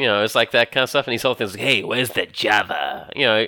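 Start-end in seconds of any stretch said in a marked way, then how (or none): 1.6-3.1 very slow, low tough-guy drawl. Imitating how a cartoon character talks about coffee: imitating Hawkeye's Wolverine-like tough-guy voice. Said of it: "kind of voice to sound like a Wolverine, 'cause Wolverine's a tough guy".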